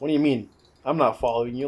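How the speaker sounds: cool, unbothered, calm and easy tone. Retelling a character's denial in the forest: imitating a calm tone. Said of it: "Like this calm tone".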